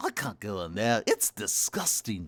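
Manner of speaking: swooping, zany cartoon voice. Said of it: "a mix up between a Beatles voice and".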